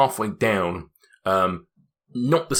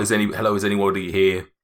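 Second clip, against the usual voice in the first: normal talking voice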